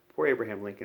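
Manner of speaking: ordinary talk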